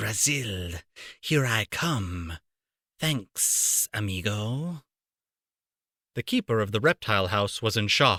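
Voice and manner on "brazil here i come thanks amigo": very slow, soft, low hissing snake voice. Narrator reads an escaping snake's words as it slides past Harry: low hissing snake voice. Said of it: "a low, hissing voice said".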